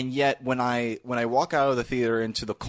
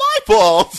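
mock cartoonish exclamation, much higher, louder; 12 dB louder than usual. Discussing a film scene, imitating a character's comic exclamation. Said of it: "this comic exclamation that you're not used to".

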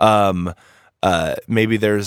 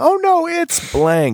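very high, stretched, slow, drawn-out panicked scream. Acting out low-level NPCs running away from a titled hero: NPCs screaming in panic. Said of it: "they're screaming".

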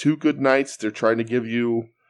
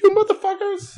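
very high, pitched-up sudden outburst; 4 dB louder than usual. Retelling a wrestler's promo line: high-pitched Juice voice. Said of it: "his voice gets so high".

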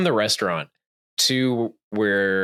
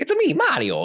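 put-on commercial voice, higher. Retelling a movie commercial scene: Mario's voice from the commercial. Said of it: "and they talk like this".

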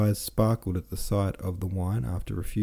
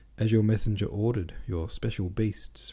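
plain reading voice

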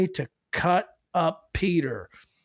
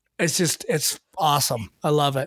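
usual speaking voice

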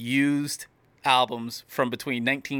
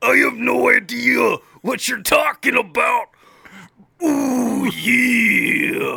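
loud, rough, drawn-out delivery; 10 semitones higher, 7 dB louder than usual. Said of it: "Then Macho Man goes".

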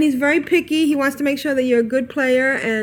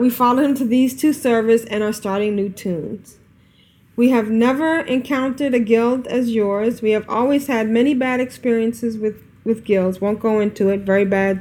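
plain

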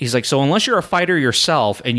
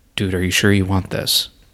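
put-on whisper, lower pitch; 5 semitones lower than usual. Retelling what the coach asked before the fight was called, retelling the coach's whisper. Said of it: "even whispered".

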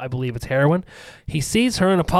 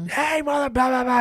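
put-on very high, drunken hillbilly holler; 10 semitones higher than usual. Retelling calling out to the dogs in the yard, imitating a drunk hillbilly. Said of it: "sound like a fucking hillbilly, drunk hillbilly".

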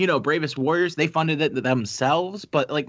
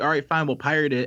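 plain

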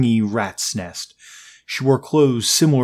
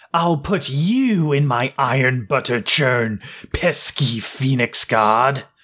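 put-on slow old crone voice. Reading a story in which Johann voices the monster: old crone voice. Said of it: "put on his best old crone voice".

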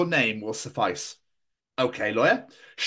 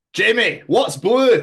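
exaggerated thick Scottish accent, higher and louder; 6 semitones higher, 7 dB louder than usual. Telling a scottish joke to another speaker: exaggerated scottish accent. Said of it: "I really better butcher my own fucking accent here".

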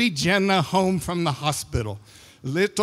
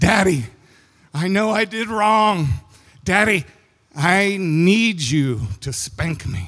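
mock scared child voice, words sobbed out, frightened. A father retells what his crying son said from his bed, imitating a crying scared child. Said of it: "and he's crying".

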